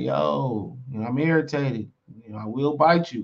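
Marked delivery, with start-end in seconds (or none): none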